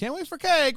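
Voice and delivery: put-on passive-aggressive tone. Retelling someone's remark after he'd been gone a while: mock passive-aggressive remark. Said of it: "does a little like passive aggressive".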